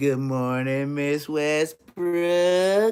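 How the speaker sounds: proper, respectful, slow and drawn-out delivery. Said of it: "You had to say it just like that".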